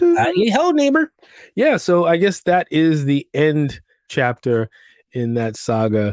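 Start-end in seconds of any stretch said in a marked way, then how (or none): 0.1-1.1 very high, pitched-way-up, cartoonish, friendly neighborly voice. Joking about a State Farm man named Ned, the speaker does a Ned Flanders impression. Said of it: "He was Ned Flanders".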